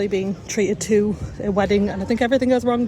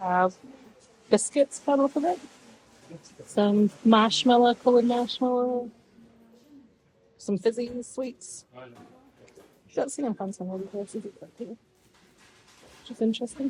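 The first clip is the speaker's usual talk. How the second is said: quiet, hushed voice; 3 semitones higher, 4 dB quieter than usual. Showing sweets in a shop without disturbing people, speaking quietly. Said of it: "Sorry if I'm going quiet".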